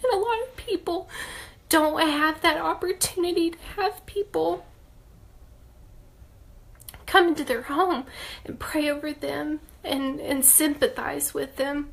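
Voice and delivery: crying through the words. Speaker recalling people who came and prayed over them: crying. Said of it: "I didn't mean to cry".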